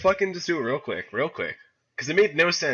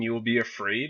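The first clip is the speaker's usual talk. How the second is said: unhinged, crazed, screaming demon voice; 2 semitones lower than usual. Retelling the words of a bloody demon figure, in a crazy demon voice. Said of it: "in, like, this crazy-ass voice".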